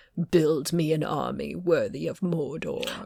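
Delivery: hushed, soft, menacing dark-lord voice. Suggesting how a character should sound, the speaker does a Sauron impression. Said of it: "I think more like Sauron in the Lord of the Rings movies".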